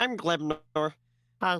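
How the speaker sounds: little, peeping, piping creature voice. Voicing Glebnor peeping up under the table: Glebnor voice, peeping. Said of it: "Glebnor peeps up and goes".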